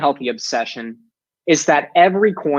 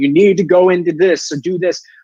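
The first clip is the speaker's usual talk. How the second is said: thundering, booming voice, screaming down; 2 semitones higher, 3 dB louder than usual. Preaching about what revelation is not: mock booming God voice. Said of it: "God in his booming voice screaming down".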